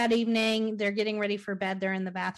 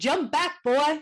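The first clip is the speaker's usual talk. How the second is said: horrible put-on Jamaican accent, pitched up; 6 semitones higher, 3 dB louder than usual. Retelling a man's confrontation with a mother and her son, horrible jamaican accent. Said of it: "In that horrible Jamaican accent".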